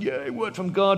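play-acted, eager, excited little cheer. Retelling being told a word from God is coming: retelling own excited cheer. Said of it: "So we got excited".

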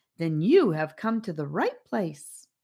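ordinary delivery

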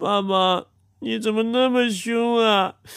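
speaking through tears. Child scolded by dad for not saying thanks, crying. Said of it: "你哭什么呀？".

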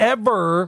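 word ever given heavy vocal stress. Showing how to italicize a word through the voice, stress on 'ever'. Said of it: "I just italicized the word through my voice".

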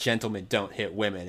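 ordinary delivery

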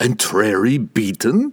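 stunned, gasping, disbelieving tone. Narrator voices Pook reacting to Laval's words: Pook gasping. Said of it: "[name] sat back in his great chair, watching the destruction through an image in the Taros hoop. It did not pain the guildmaster to see the were-rats dying".

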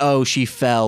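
ordinary delivery

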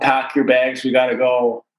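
ordinary talk

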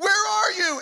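high-pitched yell calling out. Retelling walking into the house and calling out for him, retelling a yell. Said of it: "And I'm yelling".

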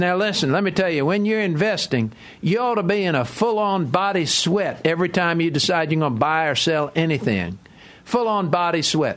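put-on grating, heavy, harsh Tennessee twang accent. Quoting a Nashville researcher's investing advice: horrible Tennessee twang as Don. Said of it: "Horrible Tennessee twang".

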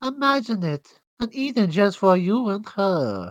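bad fake European accent, slow and high. Discussing a Hellboy scene, quoting a British actress's line, imitating a bad European accent. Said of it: "a British lady doing a European accent that's bad".

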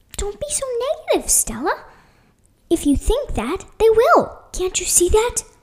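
stage whisper. Skyler whispers back to Stella while planning an escape, in a loud whisper. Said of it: "whispered Skyler in a whisper equally as loud as mine".

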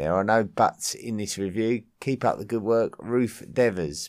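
ordinary talk, nothing marked

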